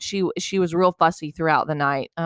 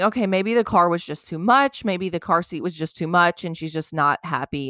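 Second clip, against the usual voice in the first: normal talking voice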